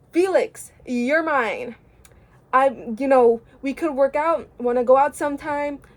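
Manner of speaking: normal talking voice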